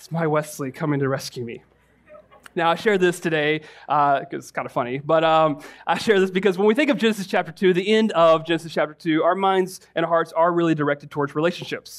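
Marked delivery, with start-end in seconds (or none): 0.0-1.6 put-on muttered whisper under breath, quieter. Retelling words a woman whispered when her suitors failed; imitating a whisper under breath. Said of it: "whisper under her breath".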